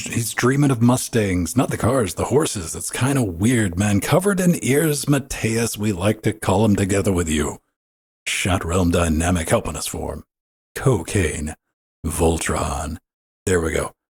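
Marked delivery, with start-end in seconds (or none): 0.0-13.0 barfy put-on radio disc jockey voice. Introducing the show's co-host, the speaker talks in a barfy DJ voice. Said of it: "I'm out of barfy D J voice".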